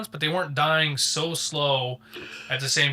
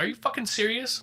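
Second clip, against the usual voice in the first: pitched-up, fed-up, disbelieving exasperated outburst; 6 semitones higher than usual. Describing the chainsaw guy who has to babysit, the speaker does a mock-pissed outburst. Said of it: "he's just so pissed".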